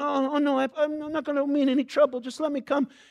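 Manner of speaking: put-on meek pleading. Speaker acting out a traveler handing over a passport abroad: mock meek pleading. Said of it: "you're kind of pleading".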